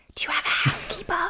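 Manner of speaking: quick, hurried whisper. Whispering an aside to a companion during the scene, quick whisper. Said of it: "I'm just going to quickly whisper to Jonathan".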